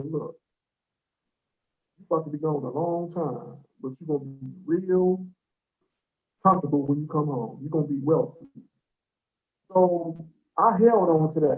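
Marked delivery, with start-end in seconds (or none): 0.1-8.5 mock steady, warm and calm voice. Recalling a voice he heard in the back of a police car, retelling a warm, calm voice. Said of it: "It was a warm, calm voice said".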